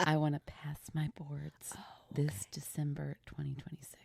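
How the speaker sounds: quiet whisper. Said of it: "I have to whisper it".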